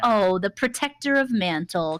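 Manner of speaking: mock-respectful, backhanded, patronizing, condescending tone. Acting out how Robin said someone's title, mock-condescending. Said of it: "in like a very kind of condescending way".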